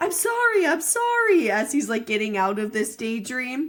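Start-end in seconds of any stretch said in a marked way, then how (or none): 0.0-1.5 mock, shrill, very high, drawn-out screaming. Retelling how the guy at the board screamed, snapping out of a daydream: imitating someone screaming. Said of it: "he's also screaming like".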